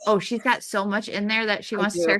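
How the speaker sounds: plain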